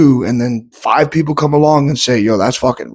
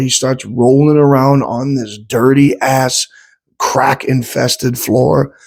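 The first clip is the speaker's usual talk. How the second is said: normal talking voice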